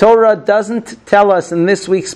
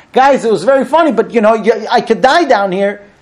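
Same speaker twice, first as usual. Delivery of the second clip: mock, desperate, beseeching begging tone; 3 semitones higher than usual. Retelling Yosef in the pit calling to his brothers, acting out his yelling. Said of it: "Yosef's yelling".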